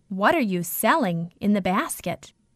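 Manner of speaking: ordinary delivery, nothing marked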